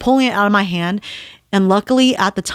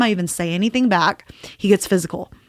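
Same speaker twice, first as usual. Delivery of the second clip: ordinary talk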